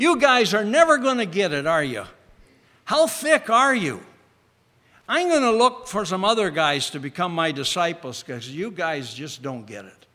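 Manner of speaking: scolding, reproachful tone. Showing a way he did not speak to his disciples: scolding tone. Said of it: "a scolding tone like".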